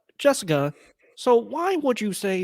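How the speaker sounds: high-pitched cartoon frog puppet voice. On the KeenGamer podcast, turning to Jessica with a question, Kermit the Frog voice. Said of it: "now it's like turning to Kermit".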